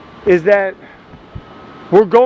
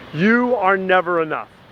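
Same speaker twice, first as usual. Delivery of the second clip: ordinary talk, nothing marked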